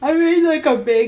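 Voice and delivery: very high-pitched words swallowed by a yawn. Mid-conversation, the speaker is tired and yawning while talking. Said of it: "sorry, I'm yawning".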